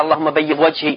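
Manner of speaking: normal talking voice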